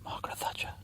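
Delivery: hushed, very soft whisper. Revealing a name too rude to say on air: whispering. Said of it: "I'll have to whisper it to you".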